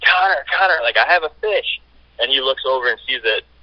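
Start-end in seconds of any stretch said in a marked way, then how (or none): 0.0-1.8 high, carrying yell, projected far. Retelling calling out to Connor while holding a fish on the line, retelling a yell. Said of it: "and I'm yelling".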